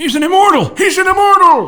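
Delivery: panicked accusing outburst. Voicing a village elder pointing at someone: accusatory and panicked tone. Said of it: "voice rang out in an accusatory and panicked tone".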